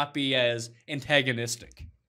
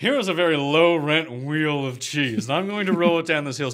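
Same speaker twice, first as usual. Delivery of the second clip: put-on posh, rich-sounding, snobbish voice; 6 dB louder than usual. Imitating the other speaker, who objects to how it sounds, in a Thurston Howell the Third voice. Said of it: "I don't speak like Thurston Howell the Third".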